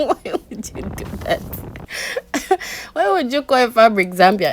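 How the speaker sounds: high, loud laughter in amused disbelief.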